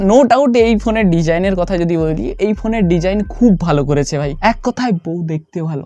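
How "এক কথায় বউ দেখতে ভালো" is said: hushed, quiet low-volume voice. Keeping it low so Mom won't hear: hushed, quiet voice. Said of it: "আসতে বলছি কারণ ভাই মা যদি শুনতে পেয়ে যায়".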